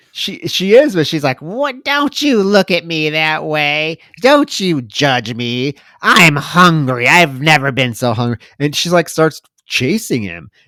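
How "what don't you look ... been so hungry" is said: put-on slow, feisty old woman's voice. Retelling a film scene, voicing a hungry zombie woman: imitating a feisty old woman. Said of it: "this feisty old woman".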